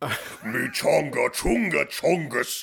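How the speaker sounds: put-on alien voice, slowed. Offering to take it on the road, speaker does a Jabba the Hutt impression. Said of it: "I've got a good Jabba the Hutt impression".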